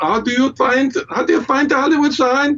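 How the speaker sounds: put-on high-pitched German accent. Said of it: "somebody with a German accent going".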